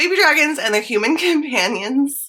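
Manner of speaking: giggling through the words. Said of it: "I can't say it with a straight face".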